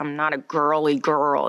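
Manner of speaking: slow American accent with really strong, hard R's. Demonstrating the accent done in I, Tonya, with really strong R's. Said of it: "really, really strong R's".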